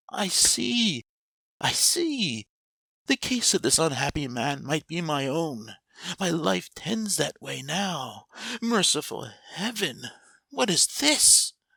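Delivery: horror-struck, shuddering, terrified cry, pitched high. Narrator reading Scrooge's words to the Spirit, Scrooge shuddering in terror. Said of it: "He recoiled in terror, / shuddering from head to toe".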